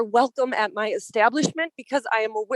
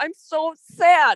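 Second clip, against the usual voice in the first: overcome, emotional voice, raised and pitched up; 5 semitones higher, 5 dB louder than usual. Speaking about a community vote on a racism resolution: emotional. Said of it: "I'm sorry, I'm emotional".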